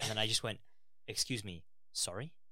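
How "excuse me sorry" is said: acted, utterly serious, no joking tone. Speaker retelling their own reply to a man's answer: retelling a dead-serious reply. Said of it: "In like the most serious".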